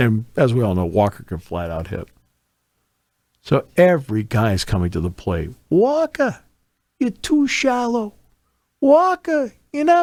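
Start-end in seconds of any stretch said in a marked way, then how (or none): 5.7-10.0 very high, heckling, jeering tone. Retelling what a heckler two rows behind kept calling out: imitating a heckler. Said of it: "there's a heckler".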